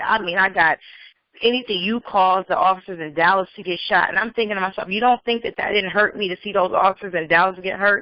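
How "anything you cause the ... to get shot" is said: normal talking voice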